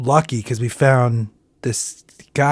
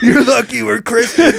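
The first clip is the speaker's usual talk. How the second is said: acted-out yell, much higher pitch; 9 semitones higher than usual. Recounting a man who yelled at them while eating chips, retelling a man's yell. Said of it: "as he's yelling".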